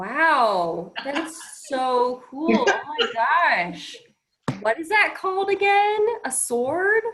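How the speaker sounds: very slow, sing-song, sarcastic, gushing awe. Playing a character who mocks another's weapon: sarcastically very impressed. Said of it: "I would like to sarcastically be very impressed".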